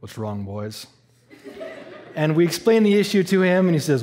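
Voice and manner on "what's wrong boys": put-on very low, deep, hushed, soft Southern accent. Retelling a stranger walking back to the group's broken-down van, in a deep southern voice. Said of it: "in a really like deep southern voice".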